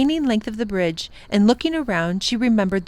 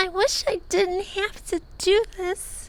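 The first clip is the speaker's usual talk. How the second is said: tiny, barely-there, very small and soft voice; 10 semitones higher, 6 dB quieter than usual. Facing a long silk span she must cross, she speaks in a very small voice. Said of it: "she said in a very small voice".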